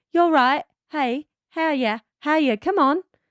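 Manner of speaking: put-on outback Australian accent. Retelling how Steven greeted the speaker, imitating Steven's Australian accent. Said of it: "that was Australian".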